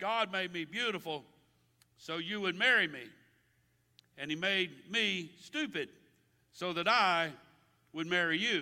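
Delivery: ordinary talk, nothing marked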